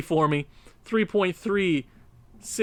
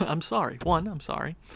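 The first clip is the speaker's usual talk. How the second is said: plain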